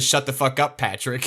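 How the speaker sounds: put-on exasperated, increasingly irritated, high-pitched tone. Retelling how Rob answers Patrick: imitating Rob's irritated tone. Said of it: "an increasingly irritated, irritated tone".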